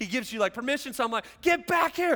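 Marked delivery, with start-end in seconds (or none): 1.4-2.2 high, loud shout. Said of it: "I'm trying to yell all these instructions".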